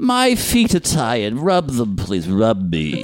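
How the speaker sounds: put-on elderly woman voice.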